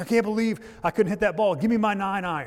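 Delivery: furious, high-pitched, angry screaming outburst. Retelling a golf partner's outburst after a missed shot, retelling a golfer screaming. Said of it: "He starts cussing and starts screaming".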